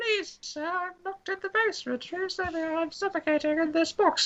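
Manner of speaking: put-on tiny, very high little kid's voice. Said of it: "I'll do a little kiddie's voice".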